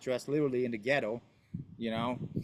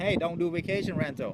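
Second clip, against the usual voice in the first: put-on shout, higher pitch; 4 semitones higher than usual. Retelling years of warning people off vacation rentals: imitating own shouting. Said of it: "over here shouting".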